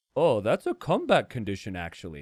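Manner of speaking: calm, unbothered, low, relaxed offhand delivery. Contrasting your own loud screaming with Dark's reaction, speak as if imitating someone so relaxed. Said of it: "so relaxed".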